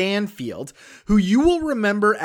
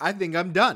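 normal talking voice

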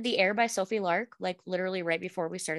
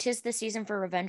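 usual speaking voice

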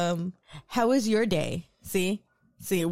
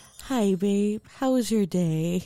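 put-on sweet, heavenly, angelic voice. Describing coming home through the door, voicing the greeting in the most angelic voice. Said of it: "the most angelic voice says".

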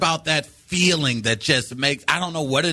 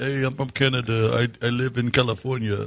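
funny put-on voice, much lower; 4 semitones lower than usual. Bantering with co-hosts on their show, he speaks in a funny put-on voice. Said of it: "Funny voice".

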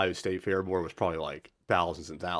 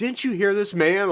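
all-out, very high, loud screaming; 13 semitones higher, 8 dB louder than usual. Retelling how the booking agent demanded service at the bar: imitating someone screaming. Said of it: "just screaming".

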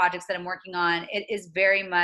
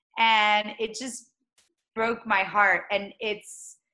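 ordinary delivery

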